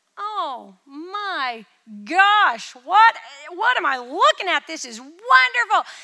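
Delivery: awed gushing, high pitched and loud.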